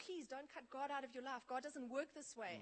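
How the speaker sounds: fast, tearful, weeping pleading tone. Recounting pleading with a woman, the speaker acts out weeping and begging. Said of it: "I started weeping and saying".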